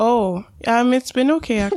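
surprised-sounding. Asked how her week was, answering and sounding surprised. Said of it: "Why do you always sound surprised?".

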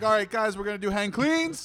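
each phrase end rises: guys, cleans. Imitating the class coach giving instructions, with rising pitch at every sentence end. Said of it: "his voice goes up at the end of every sentence".

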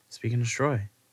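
said softly. Answering the other speaker's catchphrase: said softly. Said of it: "I said it softly".

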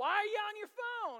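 agitated outburst, very high-pitched, very loud, shrill. Retelling snapping at his wife over her phone during confession; retelling an agitated raised voice. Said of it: "I got a little agitated and raised my voice".

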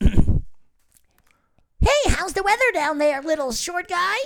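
tiny, squeaky, very high, slow voice. Improvising as a huge character who has a tiny voice: tiny high voice. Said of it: "I'll do my high".

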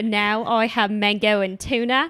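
slipping into an Australian accent. Describing what they eat now, slipping into an Australian accent. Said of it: "I don't know where my Australian accent just came".

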